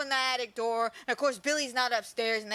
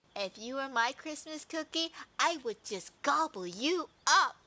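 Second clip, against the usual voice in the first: mock unsettling, creepy, close-in voice. Retelling a movie scene where the mother leans into Agnes: imitating a creepy mother. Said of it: "creepily leans into Agnes".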